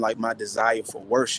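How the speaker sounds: ordinary delivery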